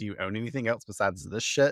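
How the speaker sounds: plain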